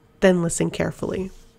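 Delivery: ordinary delivery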